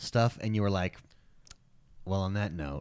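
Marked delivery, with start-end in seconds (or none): 2.0-2.8 put-on defeated tone, lower and quieter. Retelling the other speaker's stream sign-off: imitating a defeated voice. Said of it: "your voice sounded so defeated".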